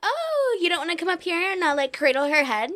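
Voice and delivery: grieving, sorrowful voice. Acting out what Mary Jane might say to Edward: acting as Mary Jane. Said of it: "If I was Mary Jane, I would be like".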